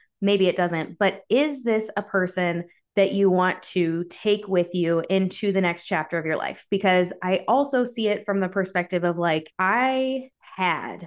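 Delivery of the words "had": heavy emphasis placed on the word "had". Describing a past friend who made everything about them: stress on HAD. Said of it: "emphasis on the word had".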